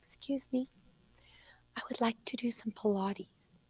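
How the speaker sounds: very soft, barely-there whisper. Retelling a hunched woman asking at the front desk, in a very soft voice. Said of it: "with a very soft voice".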